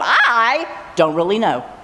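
"really" heavily stressed and drawn out slowly. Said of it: "just emphasize different words".

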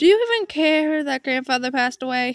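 plain reading voice

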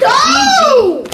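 yelling, pitched high.

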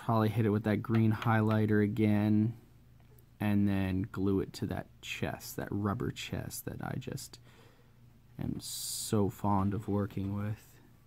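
half-whispered, breathy mock fondness, dry sarcasm. Describing the next steps of building a Batman armor costume: sarcastic. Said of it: "that's just complete sarcasm".

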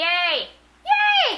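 loud voice. Cheering while playing a game, being loud. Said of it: "Sorry for being loud".

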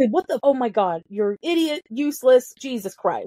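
normal talking voice

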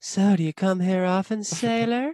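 very high put-on girl voice. Showing how the co-host would sound doing the girls' voices, put-on girl voice. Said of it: "You probably have a good girl voice on".

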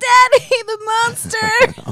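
put-on very high, hysterical sobbing wail. Retelling running into someone at a pool party at four: imitating hysterical crying. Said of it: "hysterically crying".

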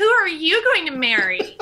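high, loud, sing-song voice, swooping up. Voicing a character who imitates Anastasia, asking who she'll marry: imitation of Anastasia. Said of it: "in her best imitation of Anastasia".

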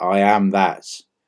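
plain

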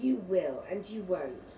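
ordinary delivery, nothing marked

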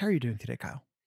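whispering. Opening the Sloopcast and greeting Kyle: whispering. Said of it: "I don't know why I whispered that".

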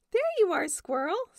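pleasant, cheery tone. Badger finds Squirrel and greets Squirrel, smiling.

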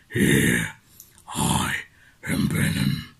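very low, creaky, rasping monster voice. In a video of celebrity impressions, the speaker does a Venom voice. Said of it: "And Venom".

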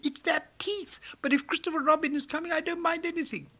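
earnest, very high piping voice. Narrator reading Piglet's reply during the expedition, earnest Piglet voice. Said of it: "said Piglet earnestly".

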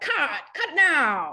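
put-on high, slow, loud, stretched-out old-timey call.

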